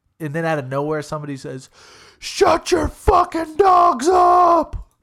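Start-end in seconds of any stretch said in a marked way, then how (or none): 2.2-4.8 shrill, high, loud booming scream, drawn out upward. Retelling how a neighbor yelled about barking dogs: imitating a neighbor screaming. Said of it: "scream that at your neighbor".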